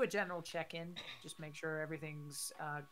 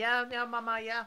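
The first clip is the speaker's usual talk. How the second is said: put-on very loud, high-pitched, heavy Italian accent; 7 semitones higher, 9 dB louder than usual. Imitating a woman talking on the speaker, heavy Italian accent. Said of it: "she's got like a heavy kind of like Italian accent, just like".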